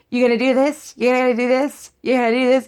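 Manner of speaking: mimicked heckling voice. Retelling a debate moment, imitating a voice from the back. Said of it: "You hear this voice".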